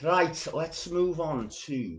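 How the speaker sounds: bad fake Scouse accent. Speaker moving on to the next poem, in a bad fake Scouse accent. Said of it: "going into a pathetically cod Scouse accent".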